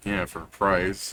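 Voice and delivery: soft, muttered, under-the-breath mumbling. Voicing a guard who mutters an aside: muttering. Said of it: "this guy will mutter".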